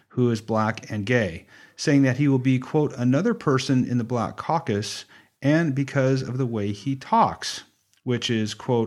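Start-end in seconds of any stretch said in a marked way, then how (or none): none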